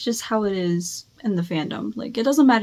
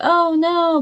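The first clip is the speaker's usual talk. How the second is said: sarcastic sympathy, raised and pitched up; 8 semitones higher, 5 dB louder than usual. Retelling how coworkers reacted to the news, imitating a sarcastic "oh no". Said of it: "in a sarcastic way".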